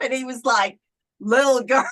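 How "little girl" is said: raised, put-on English accent. Retelling the priest's reply during clergy training, imitating an english accent. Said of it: "in his English accent".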